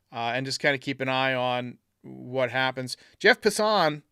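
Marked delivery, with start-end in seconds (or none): 3.2-4.0 Passan with stress on the second syllable. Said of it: "I put the emphasis on the wrong syllable".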